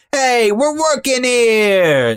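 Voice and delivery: put-on sudden, very high New York accent, drawn out. Speaker describing Garrett's accent suddenly popping out: imitating Garrett's New York accent. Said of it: "They have very inconsistent New York accents".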